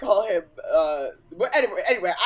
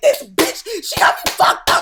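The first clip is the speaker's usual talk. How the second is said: loud, screaming, ranting outburst; 11 semitones higher, 8 dB louder than usual. Retelling own reaction on a beach to shocking news: imitating own screaming.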